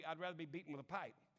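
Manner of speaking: glib, offhand, flip delivery, acted. Pastor [name] recounts answering kids who invited him along, retelling a glib remark. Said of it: "kind of glibly".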